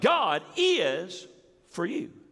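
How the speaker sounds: stress on the word is. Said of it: "you could do it this way".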